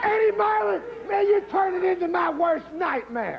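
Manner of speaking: outraged, angry, indignant shouted rant.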